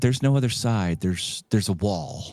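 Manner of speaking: put-on very polite sweet tone. Retelling someone's reply to a lady, in the nicest tone possible. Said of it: "in the nicest tone possible".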